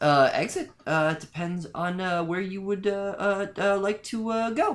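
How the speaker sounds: high, halting stutter with uh-filled stops. A character answers strangers who demand the exit: weird stutter. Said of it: "he kind of speaks with this weird stutter".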